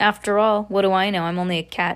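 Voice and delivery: ordinary delivery, nothing marked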